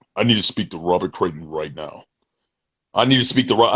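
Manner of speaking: hard, low, stern militant voice. Retelling a phone call from an unknown caller, imitating a militant voice. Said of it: "Militant voice comes on the phone".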